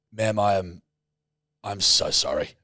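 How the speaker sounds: meek, humbled, soft, very slow drawn-out delivery. Retelling an apology to a check-in agent: imitating a humbled apology. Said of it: "And I just swallowed my".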